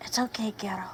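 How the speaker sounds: gentle, soft, comforting, reassuring whisper. Reaching down to an unconscious animal companion, hands in its fur: whispering. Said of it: "put my hands in his fur and whisper to him".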